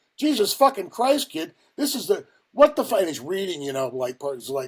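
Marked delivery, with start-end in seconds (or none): 0.2-3.0 furious yelling, very high-pitched and loud. Retell how a man bawled you out while reading what you wrote, imitating someone yelling. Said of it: "He's yelling at me".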